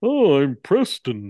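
mock cartoonish caveman voice. Asked by chat for an impression of Preston, doing a Barney Rubble impression. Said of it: "That's your Barney Rubble impression".

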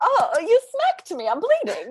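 very high, swooping nineteen-forties movie voice. Quoting a film character who was just hit, in a 1940s film voice. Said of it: "clearly I just love doing all these forties voices".

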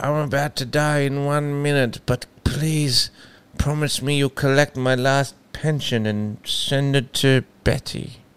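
put-on voice of a dying old grandfather. Playing a grandfather making a last request, voicing a dying grandfather. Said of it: "What if that was their grandfather, and he goes".

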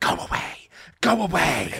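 high, hissing creature voice. Retelling a man's encounter, the speaker voices the thing in a hissing creature voice. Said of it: "it spoke to him in a hissing voice".

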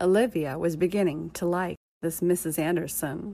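plain reading voice

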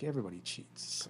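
put-on patronizing, know-it-all, breathy whisper. Retelling what a cheating man said to him: imitating someone condescending. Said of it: "he was very condescending".

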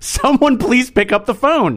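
loud, high shout. Retelling waiting while nobody at the store picked up, retelling shouting into the phone. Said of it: "I'm like shouting into my phone".

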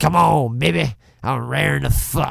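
rough, creaky, flirtatious voice. Picturing a film character's opening line, imitating Robert Englund as Buck. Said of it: "You can just see a fucking curly-haired, greasy Robert Englund".

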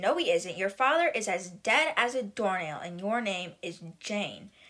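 ordinary delivery

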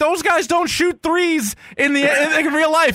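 high screaming yell, slow and very drawn out. Recalling a Sega basketball game at ten, the speaker retells screaming at him; retelling a childhood scream. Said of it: "and I'm screaming at him".

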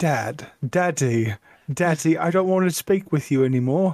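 put-on child voice with British accent. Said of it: "I have a British accent".

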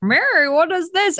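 put-on disbelieving stunned exclamation. Retelling how a film character reacts on seeing mary: imitating a shocked man. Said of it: "so shocked that he's, he's like".

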